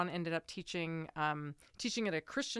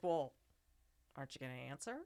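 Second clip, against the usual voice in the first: soft, completely flat, imitated deadpan delivery; 3 semitones lower, 5 dB quieter than usual. Recounting a baffling moment, quoting what Sean said: retelling Sean's deadpan. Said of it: "Sean, deadpan".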